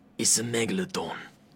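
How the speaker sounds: bad put-on British accent. Doing an impression in an interview, imagining being bald and British: Jason Statham impression. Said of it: "I do a great Jason Statham impression".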